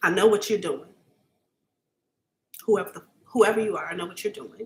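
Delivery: about to cry, near tears. Speaker addresses an unknown performer who gave them goosebumps: about to cry. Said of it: "I'm about to cry".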